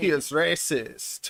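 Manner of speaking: put-on German accent. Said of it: "I get to do the German accent".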